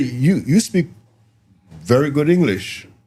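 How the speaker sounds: surprised, impressed tone. Retelling what surprised clients said: imitating surprised clients. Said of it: "you could hear the surprise in their voice".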